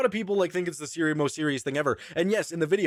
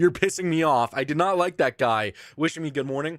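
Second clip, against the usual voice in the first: plain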